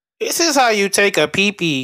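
put-on little robot voice reading out words. Joking with friends about TikTok, doing the TikTok robot text-to-speech voice. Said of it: "The little robot reading the words".

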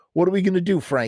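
frightened, high, rushed, begging tone. Narrator reading a story, Freddie asks Frank what to do: fearful pleading. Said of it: "He pleaded fearfully".

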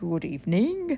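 deep, breathy monster voice. Reading a story, the substitute monster under the bed greets: low, breathy voice. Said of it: "said a low, breathy voice".

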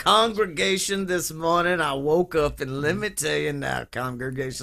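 very thick Southern preacher voice. Speaker imitating how a man sounded, southern preacher voice. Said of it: "He had that very southern preacher voice of like".

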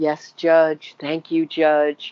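put-on posh British accent. Describing a woman answering the judge, the speaker imitates her put-on posh British accent. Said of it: "The posh British accent came out".

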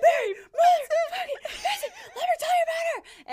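very high, loud, gleeful laughing shout.

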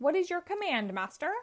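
high, squeaky little robot voice. Narrator reading a story; a newly built robot speaks to Robotnik, squeaky robot voice. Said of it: "Said the robot in a squeaky voice".

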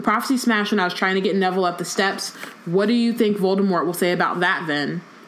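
ordinary talk

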